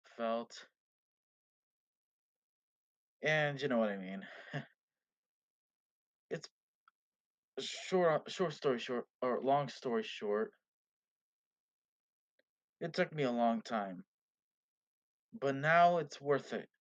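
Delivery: defeated, depressed sound. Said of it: "Why does he sound so defeated?".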